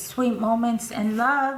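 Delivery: ordinary delivery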